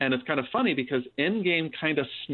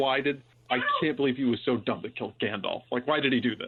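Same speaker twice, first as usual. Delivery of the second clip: put-on muttering under the breath. Retelling what the youngest child kept saying: imitating someone muttering under breath. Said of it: "muttering under her breath".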